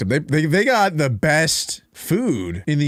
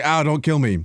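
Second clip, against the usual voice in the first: frightened, scared, wailing pig cry. Voicing a pig running around scared: imitating a scared pig. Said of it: "it's like a pig when, when it's, like, running around and it's scared".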